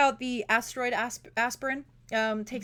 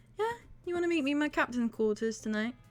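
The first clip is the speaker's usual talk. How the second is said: voice dropped slightly lower, soft and breathy; 3 semitones higher, 4 dB quieter than usual. In a role-play, the captain invites the other player to her quarters, slightly lowered voice. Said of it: "lowers her breath a little bit or lowers her voice".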